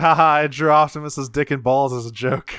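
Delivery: ordinary delivery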